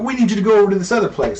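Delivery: high-pitched, fast, frantic, panicked pleading voice. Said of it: "he's in a panic".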